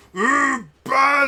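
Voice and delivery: ogre character voice. Voicing an ogre that missed its charge: ogre voice. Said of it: "He just runs back going".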